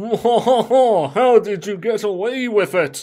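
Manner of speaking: poor fake French accent. During a group role-play, one player asks a question in a bad French accent. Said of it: "put on your worst French accent".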